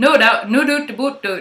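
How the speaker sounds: classic Nova Scotia-style East Coast Canadian accent. Showing what an East Coast accent sounds like: East Coast Canadian accent. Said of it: "classic Canadian accents".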